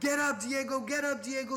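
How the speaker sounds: loud high-pitched yelling.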